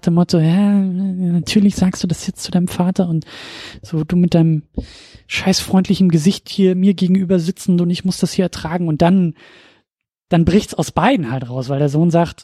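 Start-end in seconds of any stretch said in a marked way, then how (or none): none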